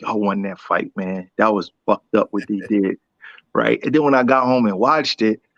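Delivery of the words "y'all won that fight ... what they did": whispered under the breath, lower. Retelling what everybody at the fight said: imitating whispering under breath. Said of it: "whispering under their breath".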